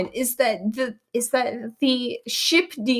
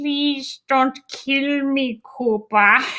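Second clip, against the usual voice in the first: slow, drawn-out, dopey toad voice; 2 semitones higher than usual. Imitating the toad from the cartoon episode: stupid Kermit the Frog toad voice. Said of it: "The stupid voice".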